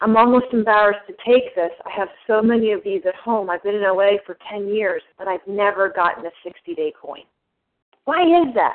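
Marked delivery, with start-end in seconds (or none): none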